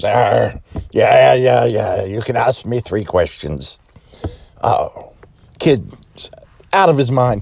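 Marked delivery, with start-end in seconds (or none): 0.0-3.8 put-on storybook pirate voice. Telling a joke, a pirate answers a little boy: pirate voice. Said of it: "Pirate goes".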